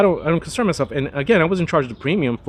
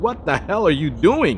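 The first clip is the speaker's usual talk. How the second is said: higher pitched mock scream. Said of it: "were just screaming at me like".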